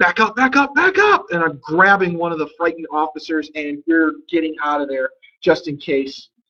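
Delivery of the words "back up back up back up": shrill, very high, urgent shouted yell. Declaring a free action in the game while retreating: in-character yelling. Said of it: "I'm yelling, I'm yelling".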